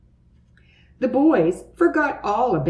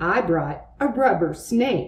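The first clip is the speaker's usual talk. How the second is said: ordinary delivery, nothing marked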